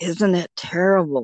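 put-on whisper. Retelling what a woman at an adoption group said on the phone: imitating someone whispering. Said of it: "lowered her voice to a whisper".

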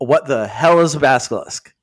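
ordinary delivery

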